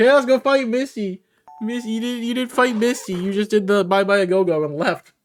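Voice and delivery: mock screaming, shouted voices. Retelling what comments said about fighting misty: imitating screaming commenters. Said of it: "screaming at me".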